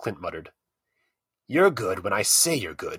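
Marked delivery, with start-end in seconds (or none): 1.5-3.0 snapped, sharp tone. Narrator reads Darden answering Clint over the card deck, snapped. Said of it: "Darden snapped".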